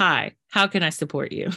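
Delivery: ordinary talk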